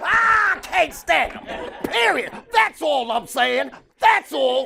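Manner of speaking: loud imitated pundit ranting. Answering a question about Cowboy fans in Stephen A. Smith's voice. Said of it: "use his voice".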